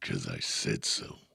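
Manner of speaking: rough, creaky, gritty superhero voice. Prompted by the other speaker to try it, saying the phrase in Batman voice. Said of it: "You go Batman voice".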